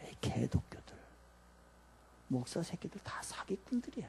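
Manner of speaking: whispered, mocking, scoffing sneer.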